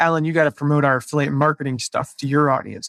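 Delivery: normal talking voice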